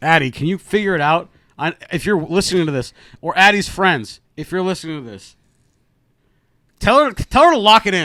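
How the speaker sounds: shouting. Telling a listener named addie to lock it in: yelling at someone. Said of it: "now I'm yelling at her".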